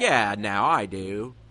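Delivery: bad put-on American accent. Imagining Kevin Love acting in a movie, doing Kevin Love's bad American accent. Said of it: "he would just have a really bad American accent".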